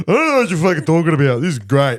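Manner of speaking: high voice, talking through a mouthful of food. Retelling how Joel answered while eating, imitating Joel, mouth full. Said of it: "with a mouthful of food".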